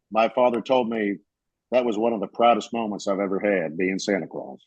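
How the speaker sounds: normal talking voice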